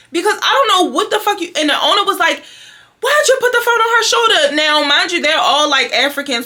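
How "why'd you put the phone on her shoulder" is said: put-on, shrill, very high-pitched yell. Retelling how the shop owner scolded a braider: imitating someone yelling. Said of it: "yelling at her or whatever".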